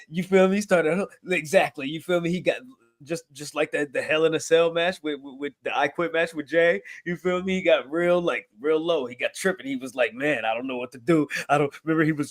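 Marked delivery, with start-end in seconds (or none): 10.2-12.1 broken-down, weepy, tearful crying voice. Describing a Hell in a Cell match, imitating Roman Reigns crying. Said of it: "when he was sitting there crying".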